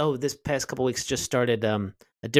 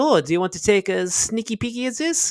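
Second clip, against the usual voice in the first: very high, put-on female character voice; 10 semitones higher, 4 dB louder than usual. Retelling improvising as a character, quoting what she said in her voice. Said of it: "as I was doing her voice".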